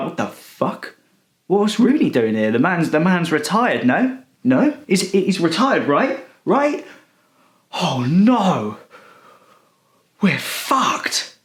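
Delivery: stunned, disbelieving, panicked voice. Imagining bringing retired players out at the World Cup, doing an impression of rival fans. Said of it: "That's my impression of um, the other fans".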